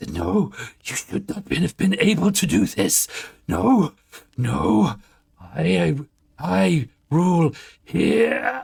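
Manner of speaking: frantic, cornered panic. Game master voicing the voice within the flame as its mask cracks, panicked. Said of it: "twisting, panicked".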